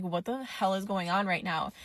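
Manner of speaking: plain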